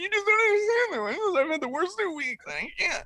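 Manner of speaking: distraught, very high, acted-out sobbing. Retelling begging a woman at the airport who shushed him, imitating his own crying plea. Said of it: "I'm really crying".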